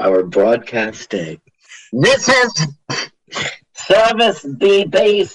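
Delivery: on-air radio station announcer delivery. Recalling how a broadcast station announced itself, in a radio announcer voice. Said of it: "that's more like a radio guy".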